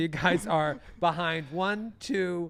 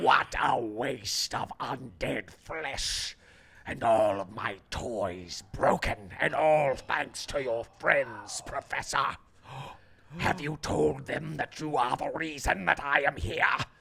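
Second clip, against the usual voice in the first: low, harsh, grating voice; 4 semitones lower than usual. Narrating to the players, voice the voice echoing in their minds: grating voice. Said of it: "A grating voice echoes in all of your minds".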